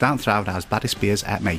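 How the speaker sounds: bad, put-on cockney accent. Asked to perform one, doing a bad Michael Caine impression. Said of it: "I do a very bad Michael Caine impression".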